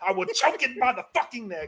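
put-on furious rant, voice high. Ranting about bringing murder to the list: mock furious ranting.

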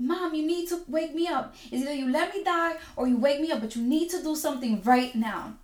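urgent screaming cry. Retelling a dream of pleading with family at the hospital: retelling own screaming. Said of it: "I'm screaming at them".

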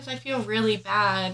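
ordinary talk, nothing marked

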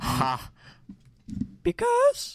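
voice cracking up very high. Speaker telling a chicken joke on the podcast, voice cracking. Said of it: "Your voice just cracked".

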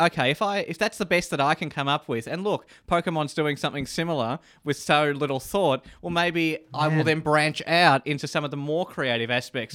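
ordinary talk

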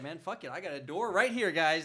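ordinary delivery

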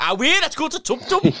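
put-on Geordie accent. Speaker teases Ben about sounding Geordie, imitating Ben's Geordie accent. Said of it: "That's my Geordie impression".

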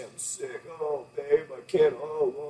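slow, whiny, self-pitying, sick-sounding moan. Acting out someone complaining of being sick: mock pity-party whining. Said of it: "you get all this pity party".

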